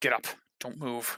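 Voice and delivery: muttered, low character voice. Game master voices Gruff speaking to Medea, Gruff muttering under breath. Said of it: "under his breath".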